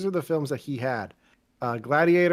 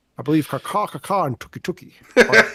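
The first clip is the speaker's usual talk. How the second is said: put-on Scottish actor voice, louder; 6 dB louder than usual. Doing an impression after being asked for a Hopkins one: Sean Connery impression. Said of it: "best I can do is, uh, Nick, is, uh, Sean Connery again".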